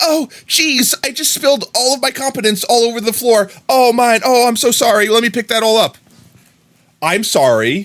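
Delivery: bumbling voice, very high-pitched and loud. Acting out one who spilled his competence on the floor: bumbling Sora voice. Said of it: "you have Sora being like".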